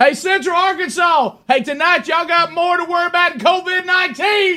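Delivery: fired-up, passionate, very high-pitched call-out. Showing a one-liner to call out the opposing crowd: passionate delivery. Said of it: "That was passion".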